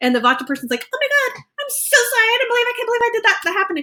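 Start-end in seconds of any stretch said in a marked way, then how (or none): 0.9-3.8 acted, anxious, flustered, very high gushing delivery. Acting out an anxious type of driver on the freeway: imitating an anxious person. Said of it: "the Vata person gets very anxious".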